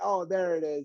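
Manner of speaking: put-on thick sarcasm on every word. Retelling how someone read out a passage: imitating a sarcastic remark. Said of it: "very sarcastically".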